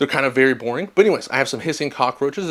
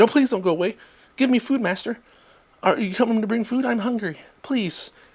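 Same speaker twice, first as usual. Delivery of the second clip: higher, begging, pleading voice like a pet; 9 semitones higher than usual. Voicing a pet begging for food: voicing a pleading pet.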